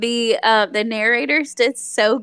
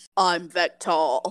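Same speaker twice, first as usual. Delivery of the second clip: put-on barbarian voice, lower-pitched; 5 semitones lower, 4 dB quieter than usual. Describing how the audiobook's Vectal talks: Vectal voice. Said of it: "Vectal always talks like".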